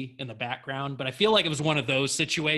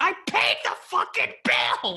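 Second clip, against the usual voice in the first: loud mock screaming outburst; 3 dB louder than usual. Retelling the actress's reply in the audition scene: imitating someone screaming. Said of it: "and screams it at him".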